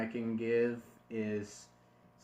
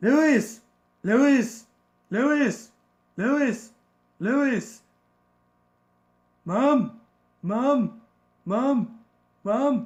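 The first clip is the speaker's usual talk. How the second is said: shouted, very high, raspy posh British voice; 13 semitones higher, 13 dB louder than usual. Demonstrating how to voice Stewie, calling out repeatedly in a Stewie voice, raspy British. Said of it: "you want to give it a British accent ... Stewie has kind of a raspy voice".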